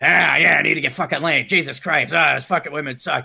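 put-on seedy, sleazy New York accent. Pitching a movie idea, voicing the seedy bachelor in a New York accent. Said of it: "And he has the New York accent too".

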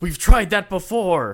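high, slow, loud, angry voice. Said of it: "Ken Watanabe angrily goes".

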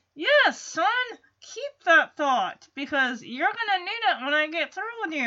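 rattled off fast through clenched teeth. Recapping a show, the speaker acts out a father answering his son through gritted teeth. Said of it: "And through gritted teeth".

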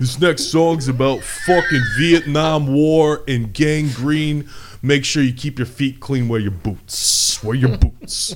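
loud, slow, put-on Brooklyn accent.

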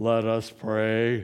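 special low prayer voice, "pray" stretched out. Retelling how a man sounds when he prays: imitating a man's changed prayer voice. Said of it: "some people even change their voice".

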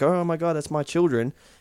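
usual speaking voice

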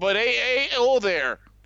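put-on North Dakota accent. Attempting a Chicago impression that comes out as a put-on North Dakota accent. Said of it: "Why are you using like a North Dakota accent".

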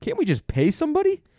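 very high-pitched, incredulous, pleading voice. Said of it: "I was like".

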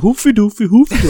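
very high, loud nonsense fake-Swedish gibberish. Retelling a customer mocking Swedes: mock Swedish chef gibberish. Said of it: "saying, like, ... just making fun of the Swedes".

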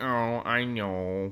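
hangdog, mopey cartoon-voice delivery. Imagining Zack Snyder reading the line, in a Droopy dog voice. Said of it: "I heard him reading it like droopy dog, like".

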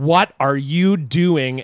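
mild shouted outburst, slow and drawn out. Retelling chasing a kid who threw a ball at the face: imitating a scream. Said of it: "I screamed at the top of my lungs".

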